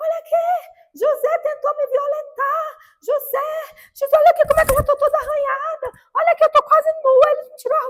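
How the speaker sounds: very high, shrill woman's shouting cry. Retelling a woman calling the guards with a false accusation: imitating a woman shouting. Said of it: "E começou a gritar".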